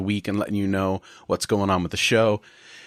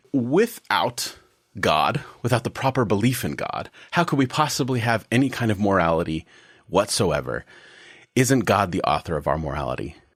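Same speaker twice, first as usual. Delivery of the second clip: deliberately sarcastic, put-on delivery. Posing the opening question for discussion: put-on sarcastic tone. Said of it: "If my tone in this question is sarcastic".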